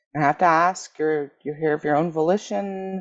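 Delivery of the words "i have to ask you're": plain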